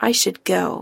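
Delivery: ordinary delivery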